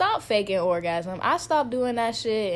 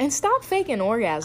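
ordinary delivery

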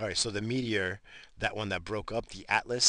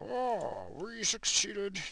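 hammy, very high, swooping put-on character voice; 13 semitones higher than usual. Quoting lines Trump might say, but done as a Bane voice. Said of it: "I'll do his voice as Bane".

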